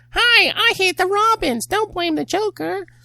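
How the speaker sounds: shrill, very high, very loud puppet voice. Joking about a face on a crowbar, voicing it: ventriloquist puppet voice. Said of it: "Freaking the ventriloquist?".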